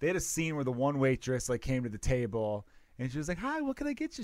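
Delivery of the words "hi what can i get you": very high, bright, chirpy voice. Retelling a movie scene where a waitress greets a table: imitating a chirpy waitress. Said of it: "She's all, like, chirpy".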